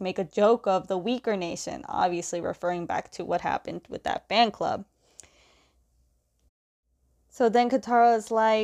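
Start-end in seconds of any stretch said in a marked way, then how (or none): none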